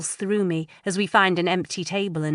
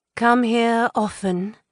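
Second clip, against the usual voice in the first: fake, pseudo-husky voice, slightly high; 5 semitones higher, 3 dB louder than usual. Emboldened by alcohol, the narrator sashays up to a man, pseudo-husky voice. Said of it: "I say in a pseudo-husky voice".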